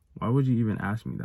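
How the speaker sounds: normal talking voice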